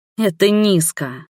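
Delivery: contemptuous, scornful, disdainful, through clenched teeth. First-person narrator answers a woman leaning across the counter, contemptuous, through clenched teeth. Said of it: "презрительно процедила ей".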